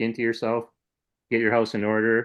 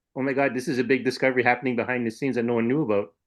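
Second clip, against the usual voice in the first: ordinary talk, nothing marked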